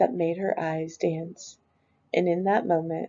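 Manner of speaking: ordinary delivery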